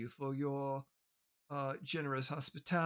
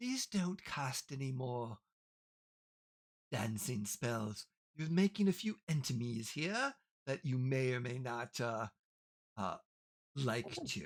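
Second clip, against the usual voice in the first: spoken very close, right into the ear; 3 semitones lower than usual. A character comes up to the listener's ear, speaking close into your ear. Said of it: "he kind of comes up to your ear".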